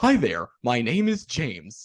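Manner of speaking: slow, swooping, drawn-out sing-song cartoon dog voice. Retelling how you introduced yourself to him at a Disney convention, imitating Dug from Up. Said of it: "imitating Doug from Up".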